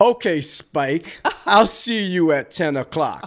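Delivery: put-on dismissive voice. Retelling own reply to a caller he didn't believe: imitating own disrespectful tone. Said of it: "I was so disrespectful because I did not believe it".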